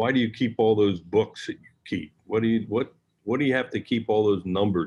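ordinary delivery

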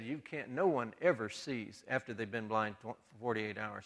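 ordinary delivery

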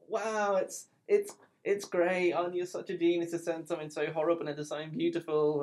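forced, strained politeness, stumbling and stammering. Retelling a gallery owner's reaction to horrible art: imitating forced politeness. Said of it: "she was just trying to be nice".

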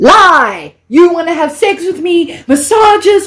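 mock frantic, high, freaked-out outburst, drawn out. Retelling an outburst at a stranger offering a massage: retelling freaking out. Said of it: "So I freak out and I say to him".

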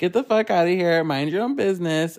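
frantic, mean, raging angry outburst. Retelling a fight where someone goes crazy on her mom: imitating someone going crazy at her mom. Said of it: "she starts going crazy on her mom".

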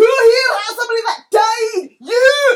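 very loud, high, shrill accusing bellow. Speaker demonstrating how he yells at and bullies people, yelling. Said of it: "I'm gonna yell".

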